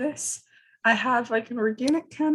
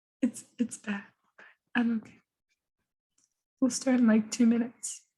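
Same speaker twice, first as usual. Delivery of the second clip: voice almost gone, barely any voice left. Starting a call, apologizing for a poor voice: voice almost gone. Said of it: "sorry about my voice. This is about all I got".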